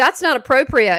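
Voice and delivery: loud scolding voice, full of disapproval. Showing how a mom looks down at a kid, mock-scolding like a mom. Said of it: "I say it real crappy like that too. I say it like, you know, like a mom would look down at the kid and go".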